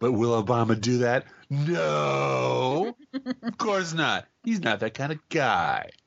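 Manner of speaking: imitated brash, half-drunk voice. Speaker retells a woman's remark, mimicking a brash tipsy voice. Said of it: "in her most brash, half in the bag voice".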